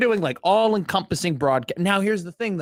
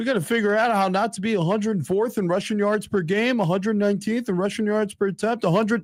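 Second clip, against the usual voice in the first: dumb guy voice, pitched higher; 4 semitones higher than usual. Playing a recorded bit answering a sports question: stupid person voice. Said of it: "that's my stupid person voice".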